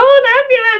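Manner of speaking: shrill, very high, loud squawk like a parrot. Retelling what the listener called out from inside, in a parrot voice. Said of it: "in a parrot's voice".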